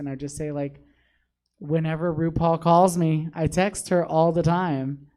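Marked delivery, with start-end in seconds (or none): 1.6-5.0 put-on polite customer service voice. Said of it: "give them my customer service voice".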